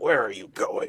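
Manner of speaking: growled delivery. As a player hides behind the rocks, the game master voices the character, growling. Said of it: "He growls".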